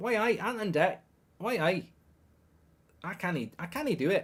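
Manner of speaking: failed, bad put-on Geordie accent. Asked in a message to do a Newcastle accent, trying an attempted Newcastle accent. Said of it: "Can you do a Newcastle accent".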